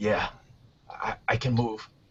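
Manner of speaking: very soft, quiet, feeble, weak mumbling mutter. Asked if he can move, the collapsed man answers, muttering. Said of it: "He kind of mutters".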